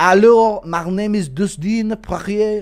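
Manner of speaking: put-on French accent. Discussing a fighter, showing off a French accent impression. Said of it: "That's a French voice".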